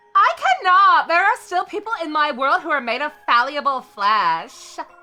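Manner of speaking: voice of an evil god. Answering Yune's plea, the speaker voices the evil god Ashura: evil god voice. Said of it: "what's our best evil god voice?".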